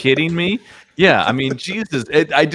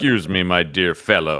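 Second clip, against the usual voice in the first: put-on highly educated formal voice, lower pitch; 7 semitones lower than usual. Quoting a little creature interjecting politely: Frasier Crane voice. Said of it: "he must be voiced by Kelsey Grammer".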